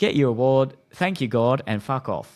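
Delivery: put-on loud, very thick Cockney British accent. Retelling a roast at the Golden Globes: Ricky Gervais Cockney voice. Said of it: "he just said in that very Cockney British way".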